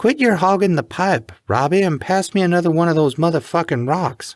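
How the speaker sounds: very high, coarse, shrill cackling voice. Narrator reading a woman's line called from the adjoining room, cackling. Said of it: "she cackled".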